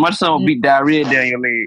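ordinary delivery

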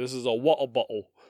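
put-on English accent. Showing a put-on English accent by taking the R's out. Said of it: "my English accent".

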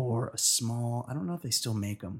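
soft speech in a half-whisper. A speaker talks to a listener in a half-whisper. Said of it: "You wanted to whisper".

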